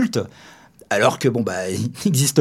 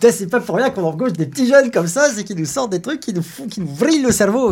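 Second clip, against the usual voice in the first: put-on pitched-up Québécois French accent; 8 semitones higher than usual. Speaker talking with another person about a film, in a Québécois French accent. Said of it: "je parle avec un accent québécois".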